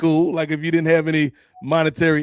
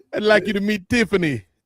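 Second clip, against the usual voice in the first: higher, put-on Jamaican accent; 4 semitones higher than usual. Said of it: "Just developed a Jamaican accent out of nowhere".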